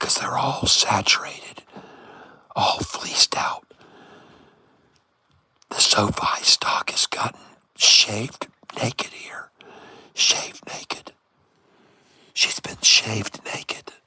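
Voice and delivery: hushed whisper. Talking to the folks watching about a stock, whispering. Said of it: "We're gonna start whispering now".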